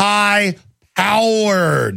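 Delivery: "high" and "powered" split by pause, each word stressed. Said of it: "this two words".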